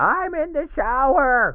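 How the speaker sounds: put-on very high, drunken hollering shout. Retelling a drunk patient's reply during an evaluation, acting out a drunken shout. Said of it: "Patient drunkenly shouting".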